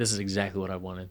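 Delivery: soft, deadpan delivery. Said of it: "Just deadpan like that".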